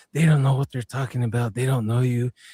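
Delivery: imitated whisper. Retelling what a creature on a couch whispered into a man's ear: imitating a whisper. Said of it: "it was whispering into his ear saying".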